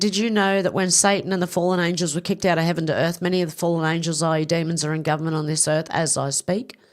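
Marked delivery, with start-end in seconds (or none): none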